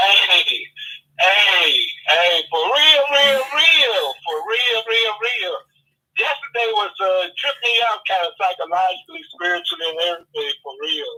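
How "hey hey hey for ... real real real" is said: joyful, loud, very slow and drawn out. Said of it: "I hear the joy in your voice".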